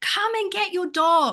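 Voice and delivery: fed-up, exasperated, high-pitched shout. Telling how they yelled at the dog's owner, retelling own yell. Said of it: "and so then I yell at him".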